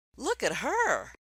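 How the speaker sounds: enthusiastic, excited exclaiming, high and loud. Teaching about exclamation points, showing an excited exclaiming tone. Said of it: "I'm exclaiming".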